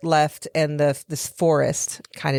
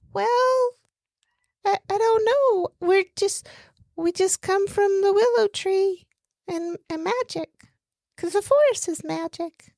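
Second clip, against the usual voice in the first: very high, way-up put-on character voice. Playing a being from the willow tree, asked about the forest: high-pitched voice. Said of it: "high pitch is way up here".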